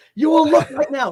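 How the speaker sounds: mock high commanding yell, firm, brooking no argument. Retelling waking a friend to look at a floating pillow: retelling own yell. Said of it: "And I yelled".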